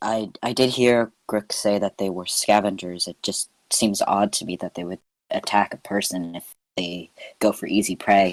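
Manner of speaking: whispering. Player as Arlie, leaning down to Gum, whispering. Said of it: "Early did say whispering".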